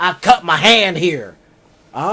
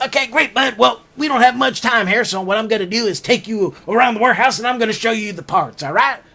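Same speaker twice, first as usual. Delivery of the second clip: put-on thick Southern accent, pitched higher; 3 semitones higher than usual. Retelling how the boss greeted him at work: imitating boss's thick southern accent. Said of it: "this very thick Southern accent".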